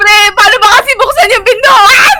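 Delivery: slow, loud, panicked yelling.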